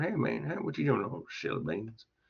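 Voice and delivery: fake Tennessee drawl, heavily laid on. Joking during a lecture about a silly phrase: put-on Tennessee accent. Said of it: "That's a Tennessee accent right there".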